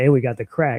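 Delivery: put-on excited voice. Retelling a funny moment, imitating Flashback excitedly. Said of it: "Flashback was so excited".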